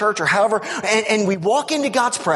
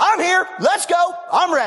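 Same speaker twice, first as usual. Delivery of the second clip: bold, all-in, loud high-pitched shout; 8 semitones higher than usual. Explaining scripture, the speaker demonstrates coming boldly before God with a loud bold shout. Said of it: "Wow, that was loud. Sorry".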